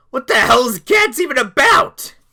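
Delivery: loud, high, cracking, breaking voice. Host addressing viewers, voice cracking. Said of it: "My voice is cracking".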